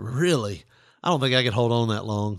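plain

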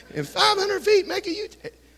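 very high, hushed, horrible navigation-system voice. In a drive-thru, retelling the GPS that wouldn't shut up, horrible GPS woman's voice. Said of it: "that's a horrible woman's voice".

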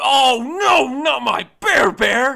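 fake riled-up rage, very high, very loud, drawn out. Redoing a line for a bit, the speaker performs it fake angry, riled up. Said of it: "do it like I'm really angry and I'm really riled up".

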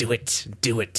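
drawn-out, very slow half-whisper. Retelling how a player urged another to do it: imitating a half-whisper like Emperor Palpatine. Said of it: "whispering in his ear, like".

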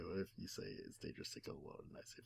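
very soft, close whisper.

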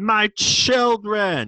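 very loud, high-pitched, pleading scream. Retelling a character's last plea as he is struck: imitating a scream. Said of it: "screams out".

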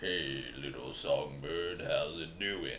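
insanely low, hushed, slow voice. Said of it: "his voice is so insanely low".

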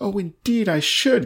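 high, exclaiming cry. A man answers the earl's offer to gallop beside the royal carriage: exclaiming. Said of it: "cried Mr. Saltina".

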